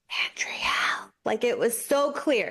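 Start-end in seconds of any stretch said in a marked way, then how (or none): 0.2-1.1 mock whisper, imitated and hushed. Retelling hearing a name in the dark at night: imitating a whisper. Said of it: "I heard my name get whispered".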